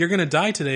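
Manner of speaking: ordinary delivery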